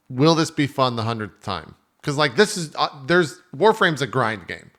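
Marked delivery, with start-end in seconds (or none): none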